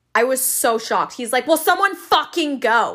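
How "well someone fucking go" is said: mock furious shout, pitched up. Retelling how a man yelled at them over a cart, retelling an angry yell. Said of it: "the guy literally just starts fucking yelling".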